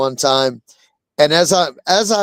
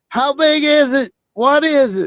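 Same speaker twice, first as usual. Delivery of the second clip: acted-out very high, drawn-out shouted yell; 9 semitones higher than usual. Retelling people in stopped cars asking about a caught carp: imitating people yelling. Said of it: "they're just yelling".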